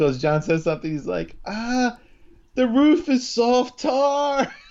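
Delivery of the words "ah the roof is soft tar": put-on excited voice, higher pitch. Retelling a TV scene, quoting Christopher: imitating excited Christopher. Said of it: "Christopher's all excited".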